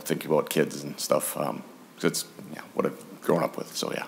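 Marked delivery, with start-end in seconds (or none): 1.4-3.8 choked up, near-whispered and much softer. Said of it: "I get emotional".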